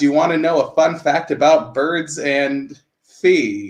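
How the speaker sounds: ordinary talk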